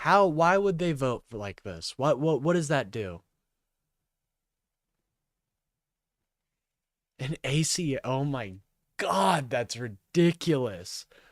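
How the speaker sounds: quiet, pissed-off, angry, ranting disbelief. Speaker covering major news reacts to how they voted, angry. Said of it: "I am so angry".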